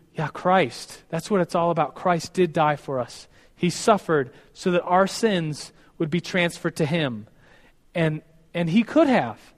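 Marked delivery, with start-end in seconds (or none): none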